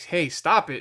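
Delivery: mock irritated, annoyed, getting-mad tone. Retelling telling a laughing cousin to stop: retelling own annoyed protest. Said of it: "I'm getting mad".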